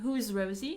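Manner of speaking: normal talking voice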